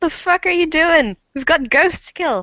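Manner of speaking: projected voice, calling across a distance. Speaking in character, the player yells over at Emily, yelling. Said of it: "I yell over at Emily".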